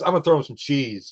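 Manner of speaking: plain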